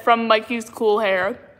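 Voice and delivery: ordinary talk, nothing marked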